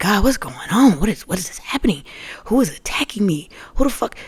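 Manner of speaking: angry ranting. Retelling suddenly being unable to breathe and crying out to god, retelling going off at god. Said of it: "I'm going off like".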